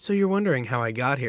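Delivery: normal talking voice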